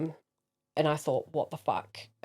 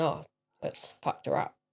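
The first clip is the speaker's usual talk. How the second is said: ordinary talk, nothing marked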